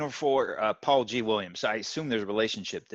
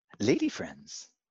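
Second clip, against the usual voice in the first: creepy stage whisper; 2 semitones lower than usual. Answering a co-host's question, in a creepy half-whisper. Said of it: "the way you whispered it sounded like weird".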